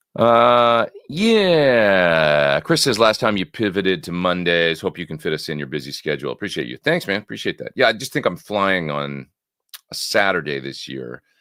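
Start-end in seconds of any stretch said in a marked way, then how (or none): none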